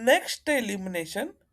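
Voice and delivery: heavy stress on NEXT in next elimination, rising tune.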